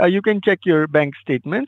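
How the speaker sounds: normal talking voice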